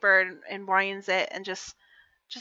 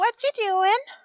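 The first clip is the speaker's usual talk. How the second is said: put-on tiny, very high, piping little kid voice; 13 semitones higher, 5 dB louder than usual. Game narrator voicing an unseen little voice calling out: tiny voice. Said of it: "So tiny voice goes".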